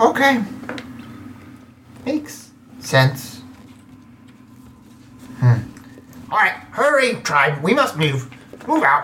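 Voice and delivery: high-pitched, slow, deliberate barking goblin voice. Game master voicing the goblin leading his tribe onward, Squelch goblin voice. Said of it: "Move faster! What are you doing? Do you not how to walk? [name] leader! Forward!".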